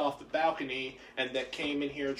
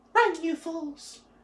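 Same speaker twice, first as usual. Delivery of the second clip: tiny, shrill squeaking voice; 14 semitones higher, 5 dB louder than usual. Retelling what a sword said in a story, tiny squeaky Alvin the Chipmunk voice. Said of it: "in a tiny, squeaky, Alvin the Chipmunk-type voice".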